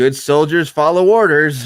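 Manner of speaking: loud, offhand, flippant, doubting sarcastic tone. Retelling how Cody said the line: imitating Cody, flippant and sarcastic. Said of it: "It's a little flippant, like, sarcastic".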